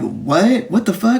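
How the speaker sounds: played-up mock astonishment, big shocked outburst. Retelling a man's reaction to news he knew nothing about, mock-surprised. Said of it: "Surprised as fuck".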